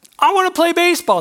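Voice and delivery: put-on high, loud young child voice.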